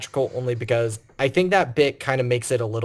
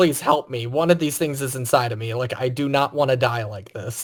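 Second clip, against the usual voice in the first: put-on begging character voice. Retelling a deleted movie scene where Ripley hands Burke a grenade, imitating Burke begging. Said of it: "like he's like begging".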